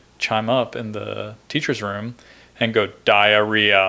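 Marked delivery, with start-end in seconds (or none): 3.1-3.9 put-on robotic voice, louder. Retelling what Google Sensei said in the teacher's room, Google Sensei robot voice. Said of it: "Like robot".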